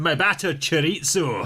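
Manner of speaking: put-on Glaswegian Scottish accent. Two podcast hosts trade jokes; deliver it in a scottish accent. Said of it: "That's the first Scottish accents we put into this podcast".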